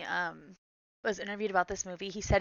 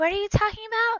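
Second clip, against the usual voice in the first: much higher, louder baffled outburst, blurted. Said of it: "and I was like".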